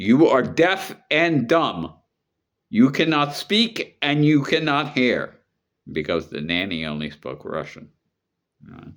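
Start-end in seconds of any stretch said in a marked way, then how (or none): 0.0-5.3 strong, forceful, very high voice. Retelling how a grandmother spoke to the nanny: retelling a forceful command. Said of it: "she said to the nanny, like strongly".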